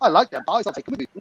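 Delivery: ordinary talk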